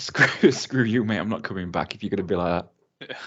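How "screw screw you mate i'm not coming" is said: ordinary delivery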